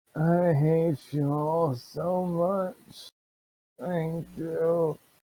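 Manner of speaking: weak, faint, hushed, barely conscious voice. A bound captive, barely awake, speaks up in a low voice. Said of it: "You just hear like this low voice".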